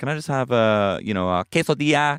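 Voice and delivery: high, put-on Spanish accent on the word quesadilla. Mocking people who order food in the foreign accent: imitating a put-on Spanish accent. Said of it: "do the voice".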